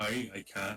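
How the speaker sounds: Scottish accent attempt. Asked by another speaker to do a Scottish accent: Scottish accent. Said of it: "Can you do a Scottish accent".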